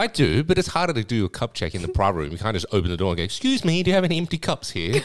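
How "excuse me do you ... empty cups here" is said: put-on high, swooping posh butler accent. Describing a cup check at a private room door, in a posh accent. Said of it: "why has your accent changed?".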